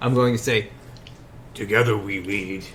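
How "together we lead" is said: bad, gruff, put-on orcish monster accent. Saying a chosen phrase aloud, in a put-on Orcish accent. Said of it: "in like a horrible Orcish, what I think is an Or- Orcish Orcish accent".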